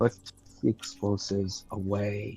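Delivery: hushed, barely audible mutter under the breath. In character, to a companion reaching under his robes; quiet mutter under breath. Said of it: "very quietly mutter under my breath".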